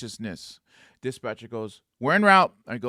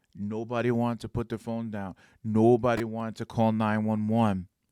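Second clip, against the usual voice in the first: plain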